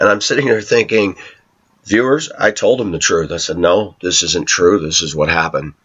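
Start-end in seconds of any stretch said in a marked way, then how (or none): none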